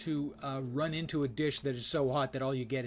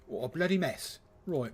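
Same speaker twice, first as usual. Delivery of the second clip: badly done put-on British accent. Speaker talking about apple pie the British way: bad British accent. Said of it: "That was my bad British accent".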